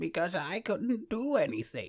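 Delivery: put-on bad, unconvincing, high old-man voice. The speaker shows how their old man voice used to sound, in a bad old man voice. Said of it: "my old man voice was more like this".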